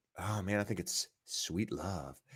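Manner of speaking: very quiet, hushed, eerie radio voice. Speaker deliberately changes into a creepy radio voice. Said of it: "You see how I changed my radio voice? Kind of a little creepy".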